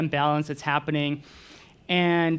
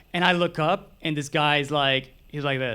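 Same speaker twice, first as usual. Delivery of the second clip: ordinary delivery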